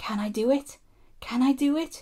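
slow, anxious, effortful puffing, rising in pitch. An engine pulling full coaches looks at the hill ahead, puffing anxiously. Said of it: "he puffed anxiously".

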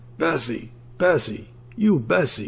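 fiendish, high yelling voice. Reading a story, old Carville yells for Bessie from the other house: fiendish yell. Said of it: "yelled for her in a fiendish voice".

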